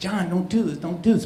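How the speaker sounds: mock imploring, begging, pleading voice. Retelling an older man begging another not to hurt someone: imitating someone pleading. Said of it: "pleading with them".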